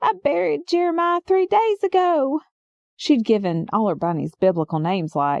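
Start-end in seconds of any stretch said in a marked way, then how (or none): 0.0-2.4 high-pitched, lifted-up explaining voice. Retelling a neighbor's panicked explanation: high-pitched voice. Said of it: "explaining in this high-pitched voice".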